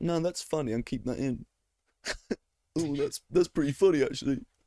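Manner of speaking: play-acted snooty, snobbish, judging tone. Acting out own future self editing the podcast: imitating own snobbish editor self. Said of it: "so much more snobbish when you're in editor mode".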